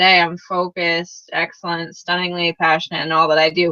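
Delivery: low, flat voice without feeling. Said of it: "if you say that with, like".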